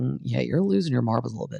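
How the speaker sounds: ordinary talk, nothing marked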